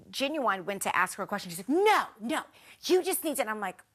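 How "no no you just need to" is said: loud, shouted retort tone. Retelling how a housemate answered a question: imitating someone yelling. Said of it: ""Why are you yelling?"".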